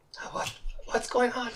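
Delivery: alarmed, confused, frightened, hushed whisper. Waking up trapped in jail, the character instantly goes to frightened. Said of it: "instantly goes to frightened".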